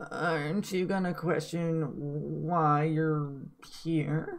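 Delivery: high, slow creature voice, why stretched long. Voicing a creature with orange eyes questioning a player: voicing the creature. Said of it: "The creature kinda looks at you ... and says".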